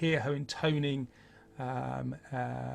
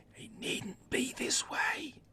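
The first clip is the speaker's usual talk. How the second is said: hushed, breathy, quiet whisper; 14 semitones higher than usual. Narrating a scene beside Alexei, the speaker voices a hooded figure, whispering. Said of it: "you can hear her saying now and whispering".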